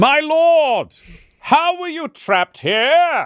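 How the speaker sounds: loud, very high-pitched, very slow, drawn-out speech. Repeating a question to a character who can't hear well: speaking loudly. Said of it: "you're going to have to speak out".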